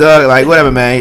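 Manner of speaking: loud, high, dismissive brush-off.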